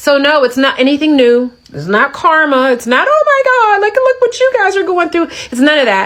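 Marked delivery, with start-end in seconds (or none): 3.1-5.3 very high-pitched, gleeful, gloating mockery. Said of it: "gleefully try to hope".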